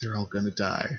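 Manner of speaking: close-up, hushed, ominous half-whisper. Voicing the woman as she leans in closer: half-whispering. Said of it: "gets in closer and just whispers".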